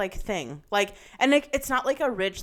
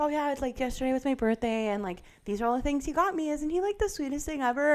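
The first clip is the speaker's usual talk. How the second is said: sugary, sweet, gushing influencer-style chatter; 4 semitones higher than usual. Retelling how a sweet influencer talks to her followers: imitating a sweet, gushing influencer. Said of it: "she'll be like".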